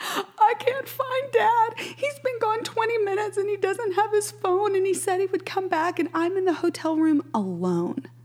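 mock screaming and crying, very high pitch. Retelling a late-night phone call from Gus, imitating Gus bawling and screaming. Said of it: "Gus screaming on the other end, bawling, crying, going".

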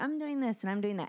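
ordinary delivery

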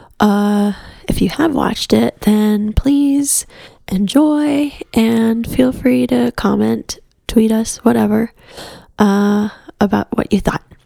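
very quiet, hushed voice. Giving a spoiler warning while a daughter naps next door: speaking very quietly. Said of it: "I'm speaking very quietly because my daughter is napping".

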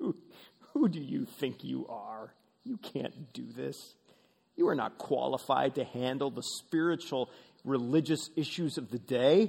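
mock jeering, scornful tone. Acting out the scribes watching the disciples fail: imitating mocking scribes. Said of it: "the scribes must be mocking".

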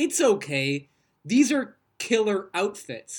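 slow, flat, play-acted dead serious deadpan. Retelling a line from Shayna, said with no smile or sarcasm: imitating Shayna, flat with no sarcasm. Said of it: "she doesn't say it with, like, a smile".

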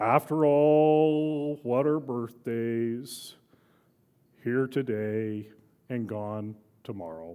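slow put-on character voice, "all" dragged out. Reading out famous Eeyore statements, trying the voice: Eeyore voice. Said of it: "I'll try to do the Eeyore voice".

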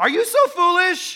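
furious, very loud, shrill, high-pitched, slow yell. Reading a question from verse 3 aloud to listeners: angry. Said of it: "read it angry".

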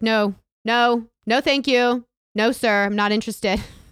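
super loud, high, dismissive tone. Re-enact turning around on a guy who made a noise in your ear, retelling your super loud reply. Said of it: "like super loud".

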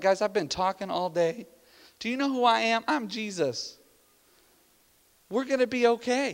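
drowsy, groggy, barely awake, just-woken voice. Imagining someone being woken during the storm: groggy Jesus voice. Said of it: "somebody up that's not really good at waking up".

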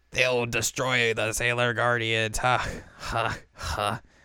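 slow, put-on smoker's rasp, villainous voice. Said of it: "Why does she sound like a smoker?".

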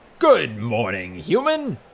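big, resounding, loud booming voice with swooping pitch. Narrator reads a greeting that startles a man in the lobby, booming voice. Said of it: "The booming voice".

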